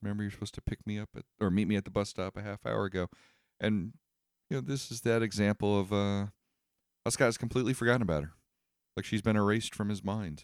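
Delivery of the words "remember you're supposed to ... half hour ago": cute, small, sweet, meek little voice. Recapping a scene where Knives speaks to Scott, cute meek Knives voice. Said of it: "in her cute little meekly voice says".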